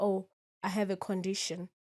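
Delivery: ordinary delivery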